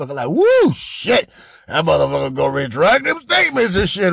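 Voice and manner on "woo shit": put-on happy excitement, much higher, louder. Commenting on a man's recording, imitating his happy excitement. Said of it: "He happy as a motherfucker".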